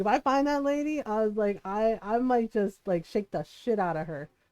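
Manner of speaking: ordinary talk, nothing marked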